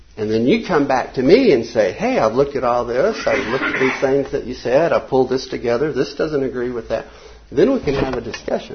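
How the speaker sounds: normal talking voice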